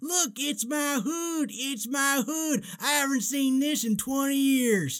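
very high, slow, stretched, excited cartoon voice. Retelling a scene from Cars after the credits: excited Mater voice. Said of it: "he's so excited as he's pulling".

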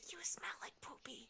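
ominous whisper. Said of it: "And the whispers say".

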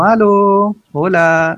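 play-acted calling shout. Speaker recalls knocking at a house where nobody answered: retelling own shouting. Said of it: "empecé a gritar así como".

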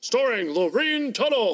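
vintage radio announcer voice. Describing old radio shows, announcing a performer's name in an old-timey radio announcer voice. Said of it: "That's how they always say their names".

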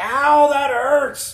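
very high, very loud, shrill yelp of pain. Recounting what the patient yelled, retelling a patient's scream. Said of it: "the patient screams".

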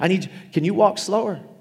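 sarcastic, high-pitched put-on voice. Joking as the Holy Spirit speaking to a volunteer, sarcastic. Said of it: "that was being sarcastic".

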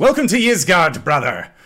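loud booming warrior voice. Voicing a bearded warrior who welcomes a newcomer: voicing a bearded warrior. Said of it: "he extends his hand out to you, uh, and says".

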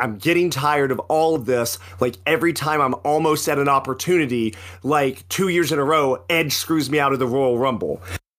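ordinary talk

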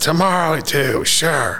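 put-on far-off shout. Retelling an old man calling from a back office: imitating someone yelling. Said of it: "I could hear him yelling that".

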